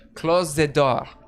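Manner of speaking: sultry woman's voice. Narrating a scene, voicing a woman heard behind a door: sultry female voice. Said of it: "You hear a uh, sultry female voice say".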